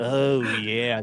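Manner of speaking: slimy, creepy, skin-crawling sleazy tone. Retelling a membership alert sound: imitating a creepy sleazy voice. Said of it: "this creepy voice".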